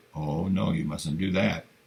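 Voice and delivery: ordinary delivery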